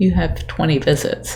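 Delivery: ordinary talk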